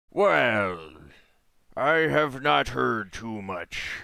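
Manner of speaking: put-on loud pirate accent, "well" drawn out. Answering in role as a character witness, slipping into pirate accent. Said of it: "I'm going a little piratey there".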